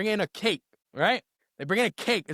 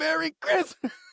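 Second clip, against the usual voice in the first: put-on laughing voice, pitched higher; 8 semitones higher than usual. Retelling a partygoer bursting out of a cake: imitating Santa Claus laughing. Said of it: "he's laughing and going like this".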